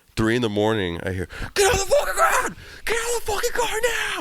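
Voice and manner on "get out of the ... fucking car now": shrill, very high screamed police officer voice. Retelling a cop's order heard at night: imitating a cop screaming. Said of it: "Is this motherfucker screaming at me?".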